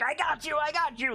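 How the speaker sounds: very high, shrill, slow, drawn-out goblin shout. Voicing a goblin in the game shouting at a player: goblin shouting. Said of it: "the goblin is shouting".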